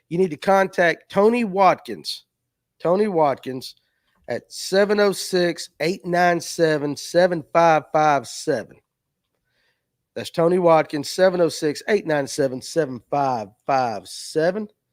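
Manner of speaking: slow, deliberate dictation delivery. Giving a phone number so Josh can type it, speaking slowly. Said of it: "I'll say it slow".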